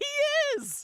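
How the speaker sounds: very high, loud excited yelp. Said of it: "one of the boys is all".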